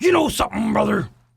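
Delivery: loud, rough, booming wrestling-promo bark. Friends trading wrestler impressions, one speaker does Hogan.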